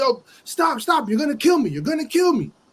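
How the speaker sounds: desperate, high-pitched, full-throated screaming. Retelling a story about a cop on a moving car: imitating a screaming cop. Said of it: "Cop started screaming like".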